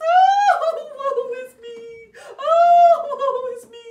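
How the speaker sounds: very loud, high, sorrowful princess lament voice. Telling a children's story, voicing the sad princess's lament: sad princess voice. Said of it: "So we've got to be sad".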